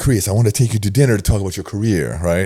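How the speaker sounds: put-on smooth voice with Italian accent. Retelling what Val said to him at the time, in an Italian accent imitating Val. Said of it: "This Italian accent".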